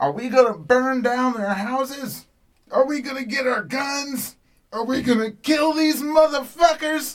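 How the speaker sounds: wild, very loud, high-pitched screaming call. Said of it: "she's screaming this crazy".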